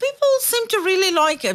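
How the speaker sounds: rising, surprised-sounding delivery. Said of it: "so then she's like".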